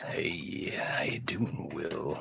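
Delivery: soothing voice. Told he has a soothing voice, the speaker demonstrates it in a soothing voice. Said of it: "Is this soothing?".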